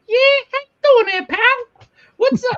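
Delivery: shrill, very high, loud squeaky voice. Retelling answering a caller from the bank, high squeaky Whitey voice. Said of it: "you do like that high pitched squeak".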